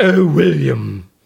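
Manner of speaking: loud, rough, belted character voice. Answering a request to give a Doctor Smith voice: Doctor Smith impression. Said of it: "can you give us a Doctor Smith?".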